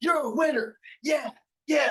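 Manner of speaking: loud, all-out, pumped-up yell. Recalling what he told himself with his headphones on: retelling his own yelling. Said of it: "And I'm yelling".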